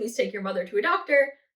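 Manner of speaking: desperate, imploring, begging plea. Retelling begging a character on the show: retelling a desperate plea. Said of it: "And I'm begging".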